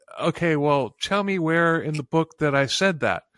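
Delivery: plain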